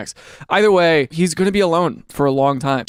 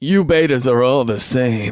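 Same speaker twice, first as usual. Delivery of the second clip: lofty, condescending, superior talking-down tone; 6 semitones lower than usual. Acting out another person's reply in a mock-condescending voice. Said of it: "Condescending voice".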